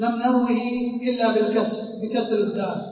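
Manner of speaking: ordinary talk, nothing marked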